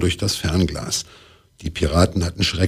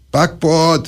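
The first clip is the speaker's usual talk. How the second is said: very high, bellowing, roaring shout; 9 semitones higher than usual. Reading a pirate woman on deck as land is sighted; roaring. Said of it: "Brüllte Piratin Piranha".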